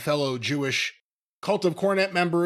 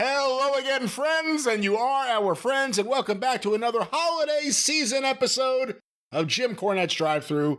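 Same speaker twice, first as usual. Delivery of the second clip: shrieking, screaming, very high voice; 10 semitones higher than usual. Welcoming friends back at the start of the episode: screaming. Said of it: "I'm screaming again".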